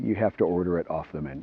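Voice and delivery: offhand, nonchalant, very hushed murmur. Retelling someone's reply to a man who wanted the burger, retelling a nonchalant reply. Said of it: "Daniel very nonchalantly says to him".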